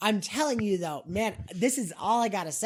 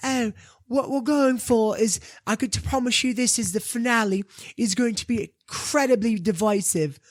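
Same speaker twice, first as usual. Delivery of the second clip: put-on slight English accent; 3 semitones higher, 4 dB louder than usual. Retelling what the actress said about the finale: Bella Ramsey English accent. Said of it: "with her little English accent".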